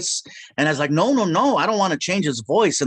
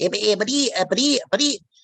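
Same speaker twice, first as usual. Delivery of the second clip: higher-pitched voice with stammering; 5 semitones higher than usual. Showing another cartoon voice: Porky Pig voice. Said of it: "Porky Pig?".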